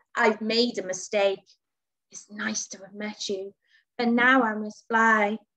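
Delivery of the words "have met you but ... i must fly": plain reading voice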